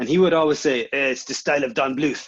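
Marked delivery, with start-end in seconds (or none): 1.1-2.3 put-on French accent. Speaker recalls the film board head tearing apart their pitch book, imitating Mark's French accent. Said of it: "what he used to say in his French accent".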